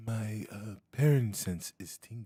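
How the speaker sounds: barely audible, very quiet, hushed, under the breath. Climbing a ladder in character, telling a companion a warning: said very quietly. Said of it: "say very quietly".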